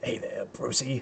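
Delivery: slow, drawn-out, very quiet, hushed delivery. Picturing a Joker line done the Pennywise way, slow drawn-out Pennywise voice. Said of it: "which was kinda slow and drawn out".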